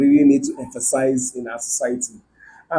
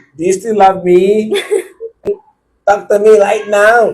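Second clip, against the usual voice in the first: thick, heavy put-on Filipino accent, pitched up; 6 semitones higher, 4 dB louder than usual. Quoting a lady from a popular meme, imitating heavy Filipino accent. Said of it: "With that deep Filipino accent".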